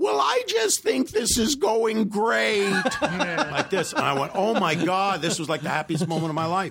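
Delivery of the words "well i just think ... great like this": squeaky, high voice, slow and drawn out. Retelling what a man who walked in said, in a high squeaky voice. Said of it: "he has this high squeaky voice".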